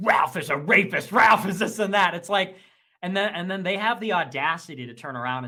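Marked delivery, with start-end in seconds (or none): 0.0-2.1 mock fuming, loud, seething angry rant. Retelling angry messages about Ralph: imitating seething anger. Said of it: "that's like seething".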